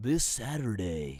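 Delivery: storyteller narrator voice. Starting a playful narration of this saturday for a co-host, in a narrator voice. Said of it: "I never knew you had such a nice voice".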